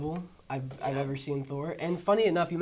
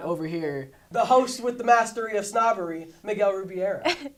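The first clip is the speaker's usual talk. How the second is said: loud radio broadcaster announcer delivery; 4 semitones higher, 5 dB louder than usual. Speaker introduces a fellow host in a radio broadcaster voice. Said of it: "get my best radio broadcaster voice on".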